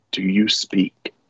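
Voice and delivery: speaking in a whisper. Leaning down to the ship as a character and asking it: whispering. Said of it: "whispers to the ship".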